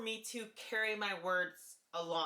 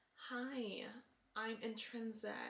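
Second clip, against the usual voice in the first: softer and quieter voice; 7 dB quieter than usual. Demonstrating the voice they used before, in a softer tone. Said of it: "but softer in this way".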